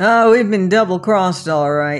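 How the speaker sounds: contemptuous, scornful sneering delivery. Peter answers the other man, sneering. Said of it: "sneered Peter".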